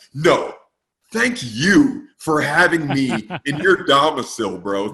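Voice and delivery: very loud, slow, grave, dead-serious earnestness. Retelling thanking a friend for having him over: imitating own serious tone. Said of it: "real serious".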